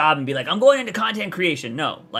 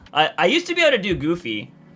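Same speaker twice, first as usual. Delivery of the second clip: ordinary talk, nothing marked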